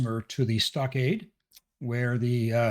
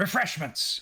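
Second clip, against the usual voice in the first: loud, projected voice calling out; 5 semitones higher than usual. Narrating a story as a character shouts out before hearing the news, shouting. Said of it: "and he shouts out".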